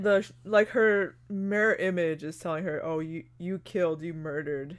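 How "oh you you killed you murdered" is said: ordinary delivery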